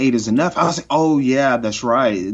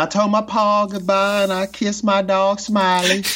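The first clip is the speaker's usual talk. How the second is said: put-on pitched-up Southern belle accent; 9 semitones higher than usual. Recalling a funny moment both speakers remember: Bissett's Southern belle accent. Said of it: "we have the Southern Belle Bissett".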